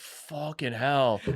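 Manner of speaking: slow, low, stunned curse, drawn out. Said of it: "I was like".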